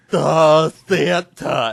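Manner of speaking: put-on nasal reindeer voice. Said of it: "we just put a nasally voice on it".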